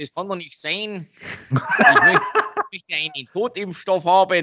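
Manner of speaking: high, laughing, put-on Hessian dialect.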